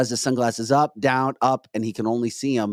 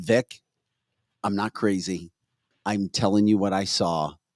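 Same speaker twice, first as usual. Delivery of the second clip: plain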